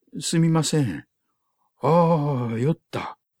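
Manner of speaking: slow, strained with discomfort. Someone given cushions on the platform replies to the narrator; pained, small voice. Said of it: "と苦しそうに小声で言い".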